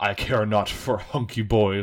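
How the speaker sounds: gruff, growling monster voice. Retelling a movie scene where the monster answers a woman: growly monster voice. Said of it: "in his, like, growly, like, monster voice".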